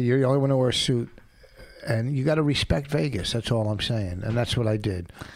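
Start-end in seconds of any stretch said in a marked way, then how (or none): none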